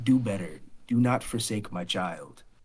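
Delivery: cold, icy, low growling voice from the background. Voicing a whisper heard in a character's mind: icy voice with a low growl. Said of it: "an icy voice in the background with a low growl".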